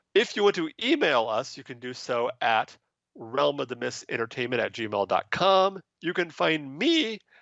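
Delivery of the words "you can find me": high voice cracking mid-phrase, caught off guard. Sharing contact details with the audience: voice cracking. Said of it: "my voice just cracked".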